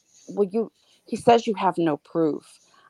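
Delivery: normal talking voice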